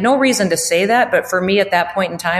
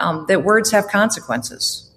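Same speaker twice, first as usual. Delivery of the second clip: ordinary delivery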